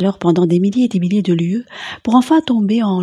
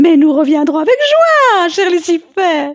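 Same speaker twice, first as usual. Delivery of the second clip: very high, shrill, paranoid outcry; 10 semitones higher, 5 dB louder than usual. Jeanne answers Lucifer, who regrets that they must leave now: paranoid exclamation. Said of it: "s'exclama Jeanne la folle, prise de paranoïa".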